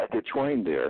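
ordinary talk

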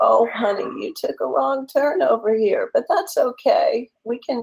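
put-on sweet old-woman voice. Imagining the GPS as a kind old lady named Edna, sweet old-woman voice. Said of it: "an old woman's voice and say".

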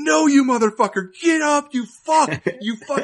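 shrill, very high, all-out screaming. Retelling watching a fight with a bet on it: imitating his own screaming. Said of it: "I'm just screaming".

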